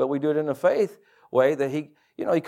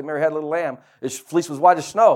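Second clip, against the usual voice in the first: usual speaking voice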